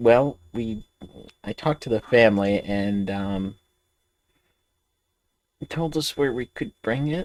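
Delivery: soft, hushed half-whisper, close into an ear. Speaking in character close to Ragnar's ear, as quietly as possible: half-whispering. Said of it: "whispering in Ragnar's ear".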